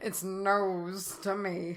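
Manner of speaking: slow, drawling, sinister voice. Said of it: "It just sound like Snape".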